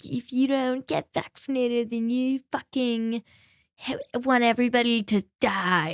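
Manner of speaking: put-on self-righteous, preachy college-student accent. Mocking people on their moral high horse during COVID, mock liberal arts student accent. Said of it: "What accent was that?".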